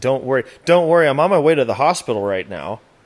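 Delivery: nonchalant, casual tone. Retelling a phone call to dad after an accident: imitating own nonchalant tone. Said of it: "That's kinda how it went".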